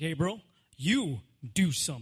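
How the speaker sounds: fatherly, father-like voice. The speaker retells the words spoken to him in that moment, acting out a fatherly voice. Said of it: "in His father-like voice".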